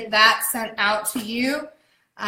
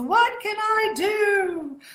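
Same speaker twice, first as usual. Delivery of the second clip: very high, very slow put-on English accent; 9 semitones higher than usual. Quoting a character in a film: attempted English accent. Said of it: "That was my attempt at an English accent".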